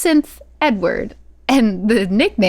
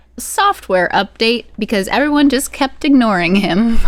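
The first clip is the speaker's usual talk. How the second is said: usual speaking voice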